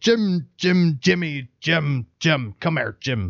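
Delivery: put-on high, slow, drawn-out, sloppy drunken pirate voice. Retelling a scene from Muppet Treasure Island: Muppet Treasure Island drunk pirate. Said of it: "there's this pirate, and he's hella drunk, and he goes".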